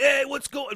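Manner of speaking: exaggerated fake New York accent. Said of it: "big New York accent".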